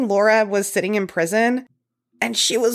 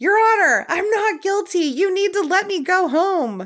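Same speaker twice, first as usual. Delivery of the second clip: mock very high, pleading, desperate shriek; 10 semitones higher than usual. Retelling how a woman screamed to the judge as she was taken into custody, imitating a scream. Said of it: "she screams to the judge".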